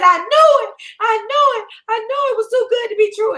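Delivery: very high screaming and crying. Retelling a phone call with Khadijah, imitating Khadijah screaming and crying. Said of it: "She on the phone screaming and crying".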